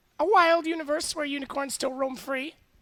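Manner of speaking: very high, squeaky ventriloquist dummy voice. Answering where the puppet comes from: ventriloquist voice for puppet Susan. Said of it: "You're literally moving the mouth when she's not talking".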